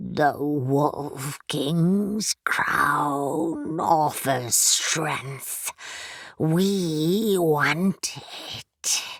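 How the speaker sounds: deep, creaky creature voice like a rusted hinge. Reading a story aloud, voicing a thing struggling to form words, deep creaky voice. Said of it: "in a deep, creaky voice that sounded like a rusted hinge".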